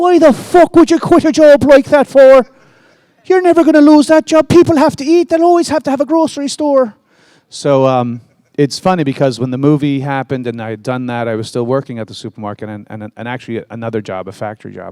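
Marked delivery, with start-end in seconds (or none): 0.0-6.9 heavy Irish brogue, very high-pitched and very loud. Recalling telling their mom they quit the job, doing her reply: imitating mom's thick Irish accent. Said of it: "my mom is from Ireland, like straight off the boat, thick accent".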